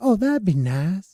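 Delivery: slow, drawn-out cartoon voice with slight Cajun accent. Imitating the guy from Family Guy: Family Guy character voice. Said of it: "I was going for the guy who was like, on, um, Family Guy".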